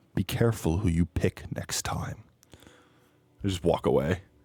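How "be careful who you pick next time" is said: quiet, close whisper under the breath. Crouching at eye level to a kneeling figure, whispering.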